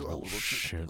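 muttering under the breath. Recounting a reaction while watching at home, muttered under breath. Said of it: "And then I try to say it under my breath".

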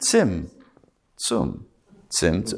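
very slow, very low-pitched delivery. Speaker teaching a Kabbalah word to listeners: said very slowly. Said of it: "I'm just saying it very slow".

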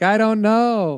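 put-on high, slow, drawn-out clueless kid voice.

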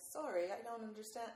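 clumsy, bad put-on English accent. Speaker recounts asking Siri for directions and its reply, in Siri's English accent. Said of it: "sends me back with this English accent saying".

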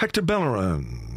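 stadium announcer voice, calling out. Imagining a stadium announcer calling out a player's name: Matt Berry voice. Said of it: "he could go".

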